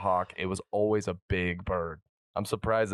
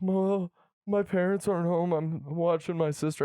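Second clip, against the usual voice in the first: acted very high, tearful wailing sob; 10 semitones higher than usual. Retelling a late-night call from a girl: imitating someone bawling. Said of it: "Crying. Bawling, crying".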